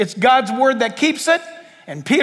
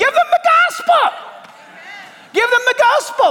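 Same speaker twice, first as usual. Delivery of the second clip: shrill, very high mock yelling; 11 semitones higher than usual. Recalling a person dying in hospice without the gospel, retelling a yell. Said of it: "and I'm yelling".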